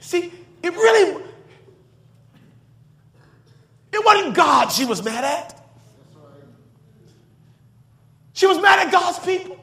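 crying while speaking. Telling about a sister's hurt, crying while speaking. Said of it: "Y'all forgive me for crying".

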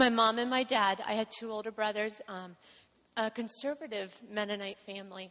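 plain

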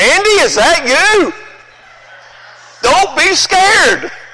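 very high, very slow, loud, drawn-out calling out. A father recalls answering his son who bumped into him, retelling a loud call. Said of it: "just about this loud".

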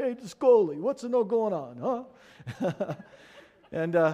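put-on New York Italian accent, Bronx style. Retelling how people play on the speaker's Italian name, Bronx Italian accent. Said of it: "try to sound kind of like a Bronx Italian".

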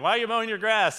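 yelling, pitched high. Telling how they called out to the man who mowed their yard, retelling a yell. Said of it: "So I'm like yelling at him".

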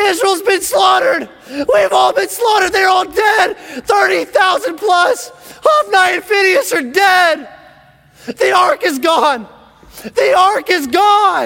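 very high, drawn-out, acted-out scream. Retelling a messenger running into the city with news: imitating a screaming messenger. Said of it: "he starts screaming".

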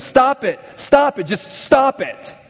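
mock very high, stretched, drawn-out yelling. Retelling a show where a counselor yells at clients: imitating Bob Newhart yelling. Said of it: "he just starts yelling at them".

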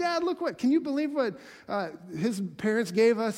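put-on gushing squeal, high and swooping. Retelling a movie scene where a daughter runs to her dad: imitating excited squealing. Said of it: "squealing to Dad".

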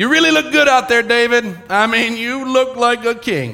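heavily ironic, dripping sarcastic tone. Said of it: "It's dripping with sarcasm".

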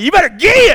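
high, loud hellfire-and-brimstone Southern preacher yell. Retelling how he yelled at a dog, the speaker quotes himself in a put-on Southern preacher yell. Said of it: "I said just like".

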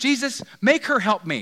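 very loud, very high, insistent, demanding voice. Retelling Martha's words to Jesus, acting out a demanding plea. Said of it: "demanding Jesus".

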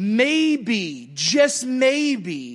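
very drawn-out, slow, sing-song sarcastic tone. Preaching about pruning and hard times, then saying: sarcastic. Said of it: "I say that with some sarcasm".

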